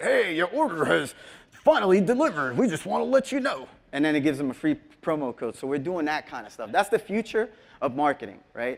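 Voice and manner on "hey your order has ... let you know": put-on pitched-up little old man voice. Demonstrating a voice message that tells customers their order arrived, old man voice. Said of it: "it's an old man".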